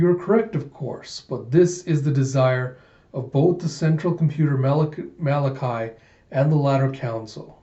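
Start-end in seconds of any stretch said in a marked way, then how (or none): none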